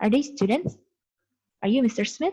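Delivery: pitch lifting upward on the word Smith. English intonation lesson, example question: rising question intonation. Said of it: "ketika bertanya seperti itu, nadanya meninggi".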